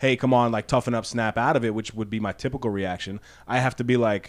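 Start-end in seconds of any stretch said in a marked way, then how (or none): none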